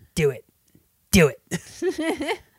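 high, encouraging tone with big pitch swoops. Comparing a character to Emperor Palpatine and acting out her line: Emperor Palpatine voice. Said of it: "She's like Emperor Palpatine".

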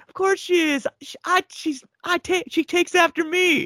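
acted out, very high, shrill screaming shout. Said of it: "she screams back".

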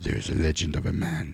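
soft, seductive, laid-on Spanish accent. Doing a voice bit for the other speaker, in a sexy Spanish voice. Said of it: "my sexy Spanish voice".

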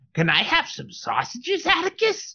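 very high, sing-song, swooping cartoon dog voice. Imitating how an audiobook narrator voices a dog, cartoony dog voice. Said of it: "I didn't expect it to have like a cartoony voice".

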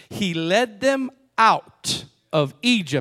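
slow, deliberate reading.

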